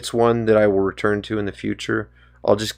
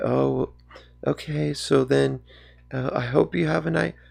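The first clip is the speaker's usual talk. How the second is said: very phony, overdone, put-on pleasant tone; 4 semitones higher, 7 dB quieter than usual. Retelling what she said to the speaker, imitating her very fake tone. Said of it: "overly, kind of like almost like just like a very fake tone".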